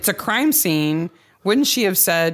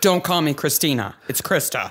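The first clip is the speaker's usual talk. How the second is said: deep put-on goth girl voice; 2 semitones lower than usual. Recapping a story, a host voices the goth daughter Krista in a deep voice. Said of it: "I'm using my deep voice when I'm Krista".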